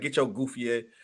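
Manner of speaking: mock aggressive joking tone. Imitating how Chicago women tease someone: imitating aggressive joking talk. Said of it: "Chicago women talk like they aggressive".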